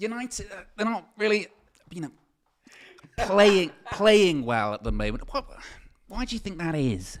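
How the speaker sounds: words forced out haltingly. Acting out asking a question, with strained, halting speech. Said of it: "Like everything's a strain to get out".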